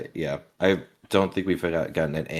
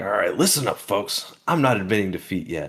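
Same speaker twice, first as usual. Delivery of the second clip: feisty put-on pirate voice, higher; 4 semitones higher, 3 dB louder than usual. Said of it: "Roger's feeling feisty again".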